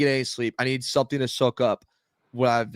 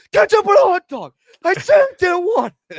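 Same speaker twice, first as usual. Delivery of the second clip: put-on scream, higher and louder; 9 dB louder than usual. Retelling a fight at a golf course to the dad: retelling own screaming. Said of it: "we were screaming".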